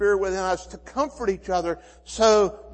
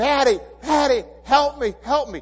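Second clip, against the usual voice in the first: put-on high, terrified, scared child voice; 6 semitones higher, 4 dB louder than usual. Retelling a frightened daughter calling from inside a tent: imitating a terrified child pleading. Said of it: "She's terrified".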